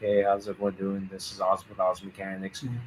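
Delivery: very quiet, low, dead-level monotone. Describing how they sound when making videos, doing their intro: flat monotone video intro. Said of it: "I get to that point where I'm just kind of monotone".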